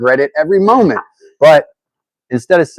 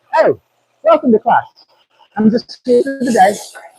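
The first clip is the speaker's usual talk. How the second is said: put-on fake British accent, very high-pitched; 11 semitones higher than usual. Retelling pretending to be a different person to a class, in a fake british accent. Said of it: "I faked a British accent one time".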